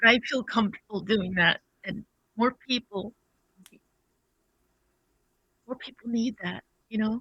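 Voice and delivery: teary speech, crying while talking. Saying they feel comfortable crying in a safe space, crying while talking. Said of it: "like I'm crying right now".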